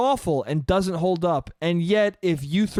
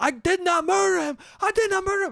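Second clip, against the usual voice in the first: play-acted robot voice losing its temper, very high; 12 semitones higher than usual. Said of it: "That one's called anger".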